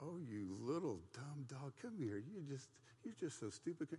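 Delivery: sweet, coaxing, sweet-talking voice.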